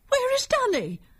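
very high-pitched, alarmed crying out. Narrator reading Grandmother as Papa returns from the hillside alone, crying out. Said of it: "Cried Grandmother".

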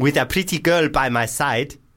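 high, exaggerated put-on South African accent. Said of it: "is this going full African?".

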